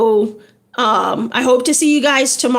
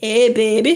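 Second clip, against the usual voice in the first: put-on Louisiana accent, lower; 3 semitones lower than usual. After naming her Louisiana accent, the speaker adds a greeting in a Louisiana accent. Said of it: "That's my Louisiana accent".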